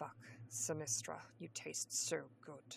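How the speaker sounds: purring, deep and velvety. Narrator reads a man pulling back for breath in an intimate scene, deep velvet purr. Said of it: "Snape purred with his deep velvet voice".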